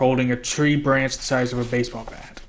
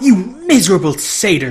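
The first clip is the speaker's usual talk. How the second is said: very loud, shrill, swooping monster snarl; 7 semitones higher, 8 dB louder than usual. Struck by Grover the satyr, Medusa answers him: Medusa snarling. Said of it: "she snarled".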